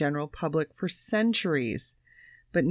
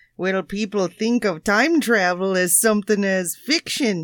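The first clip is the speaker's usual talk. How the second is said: put-on Canadian academic accent, louder; 7 dB louder than usual. Asked to pick a country, the speaker launches into a Canadian academic accent. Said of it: "it's Canadian academic".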